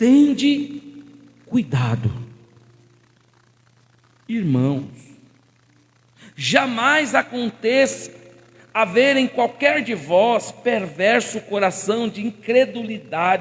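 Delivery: slow, unhurried reading, pausing at commas. Reading Hebreus three twelve aloud to a group: slow reading. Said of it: "Ó como é gostoso a gente lê devagar".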